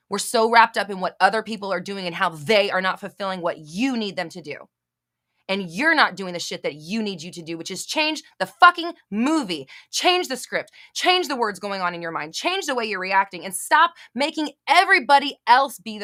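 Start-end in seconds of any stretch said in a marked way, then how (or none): 7.8-16.0 worked-up, heated, scolding ranting tirade. The speaker, addressing the listeners as you guys, is yelling. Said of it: "That wasn't me yelling at you guys".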